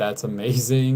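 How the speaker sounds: ordinary talk, nothing marked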